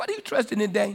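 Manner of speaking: mocking taunting tone. Retelling how he was taunted in the name of the king of Assyria, mocking. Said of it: "He mocked him".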